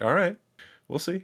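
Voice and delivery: passive-aggressive tone, a touch high in pitch. Retelling a scene, imitating Spock: Spock passive-aggressive voice. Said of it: "Spock goes full Vulcan passive aggressive".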